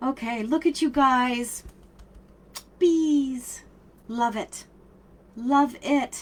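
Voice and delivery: crying while talking, tearful voice. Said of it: "I'm crying too".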